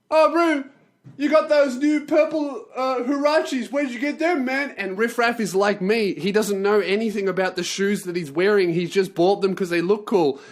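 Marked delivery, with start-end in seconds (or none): 0.1-4.7 put-on high-pitched stoned yelling. Retelling a high guest yelling across the room about shoes: imitating a stoned guy yelling. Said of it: "He starts yelling at Riff about his shoes".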